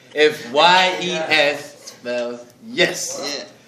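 slow, drawn-out, letter-by-letter spelling.

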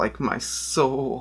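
mock gloomy, brooding emo voice. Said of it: "Think of a better joke".

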